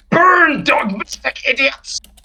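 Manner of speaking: piercing, shrill, very high-pitched yell. The game master voices the heretic Evansteyer as he trips and falls, Evansteyer yelling. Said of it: "he yells".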